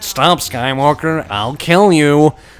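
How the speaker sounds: very slow, flat, generic bad voice acting. Mocking a game's generic ally lines, the speaker performs one: deliberately bad voice acting. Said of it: "with about as much quality voice acting as what I just said".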